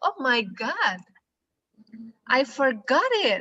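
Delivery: shocked, surprised, startled exclamation. Teaching an english example phrase, demonstrating a shocked exclamation. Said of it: "ekspresi kaget".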